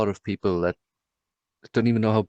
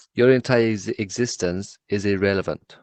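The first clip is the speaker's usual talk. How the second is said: ordinary talk, nothing marked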